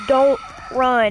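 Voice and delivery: plain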